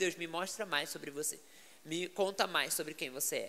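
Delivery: ordinary talk, nothing marked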